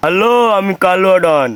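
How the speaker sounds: put-on thick, thuggish goon voice. Playing a goon introducing themselves when asked to, in a thick voice. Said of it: "একটু মোটা গলা করে বলো".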